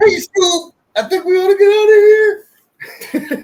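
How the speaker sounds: very high, loud cartoon voice. Reacting to the mention of Shaggy's voice actor: Shaggy voice. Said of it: "became the voice of actually Shaggy Rogers".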